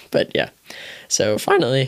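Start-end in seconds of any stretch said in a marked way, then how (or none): 1.1-1.9 cracked, breaking voice. Moving on to the final item, voice cracking. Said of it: "voice crack there".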